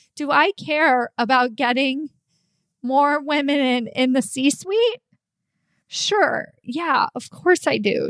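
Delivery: tearful, crying through the words. Speaker talking about why they do their work, crying. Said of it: "I'm, I'm crying".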